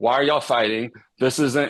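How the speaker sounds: frustrated, loud. A frustrated parent retells walking in on two fighting sons, retelling own raised voice. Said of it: "And I start raising my voice".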